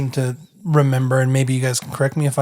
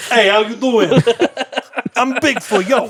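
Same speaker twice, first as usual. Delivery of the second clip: put-on New York accent, much higher; 9 semitones higher than usual. Joking about Bigfoot, a speaker does Bigfoot with a New York accent. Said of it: "he had a New York accent".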